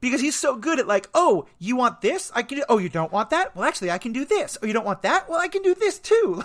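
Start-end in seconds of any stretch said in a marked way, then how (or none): 1.1-6.4 slick, slimy used-car salesman voice. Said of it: "he's just so slimy in that regard".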